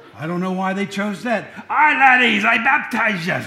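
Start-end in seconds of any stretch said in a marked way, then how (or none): 1.7-3.3 loud, slow, booming bad Scottish accent. Recalling a movie, the speaker voices John the Baptist: worst Scottish impression, Charlton Heston. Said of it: "There's my worst Scottish impression".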